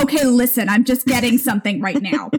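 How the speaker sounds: clumsy, bad put-on Long Island accent. Imitating a TV medium talking to people, bad Long Island accent. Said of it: "I don't do a good, like, Long Island accent".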